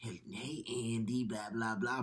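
hushed, soft, scary killer-doll voice. Talking about the actor who voices the doll, quoting it: scary Chucky voice. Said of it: "and that voice and that doll, like".

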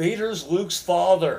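high, very loud shouting yell. Retelling a friend yelling a spoiler at a crowd from a car: imitating a friend yelling. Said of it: "he yells out".

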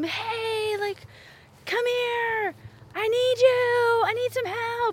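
high-pitched, far-carrying, put-on yell calling out. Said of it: "yelling across the house to him".

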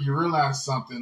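ordinary delivery

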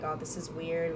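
ordinary talk

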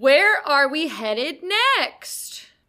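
loud, slow, drawn-out, very excited voice.

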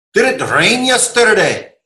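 put-on Scottish accent. Trying to copy the other speaker's accent, in a stereotype scottish accent. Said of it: "it's a stereotype Scottish".

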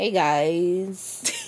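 slow, dragging delivery, words delayed, "guys" drawn out. Answering why Spinner talks so slow, imitating Spinner's dragged words. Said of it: "He, like, drags it".

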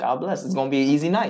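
ordinary talk

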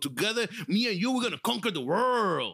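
put-on b-boy style voice. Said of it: "when I said world like that, I sounded like that boy from the, the B-boy".

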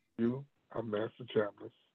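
acted calm delivery. Retelling what was said to the speaker, imitating a very calm voice. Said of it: "in a very calm voice like that".

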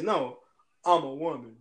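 very drawn-out, slow, deep bass voice. Acting out what a confused kid might hear: imitating a deep voice. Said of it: "in this deep voice".

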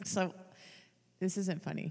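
half-whispered, breathy, laughing through the words. Starting to describe a show about a paralyzed man, laughing while talking.

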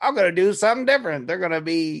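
put-on quick old country-man voice.

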